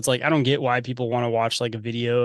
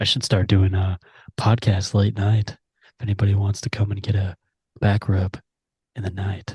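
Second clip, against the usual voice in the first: mock-seductive, much lower, deeper, quieter voice; 4 semitones lower than usual. Speaker demonstrating an easy trick for a seductive voice: mock-seductive deeper, quieter voice. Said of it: "talk a little bit deeper and quieter and closer".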